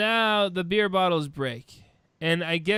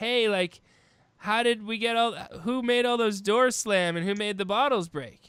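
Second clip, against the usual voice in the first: plain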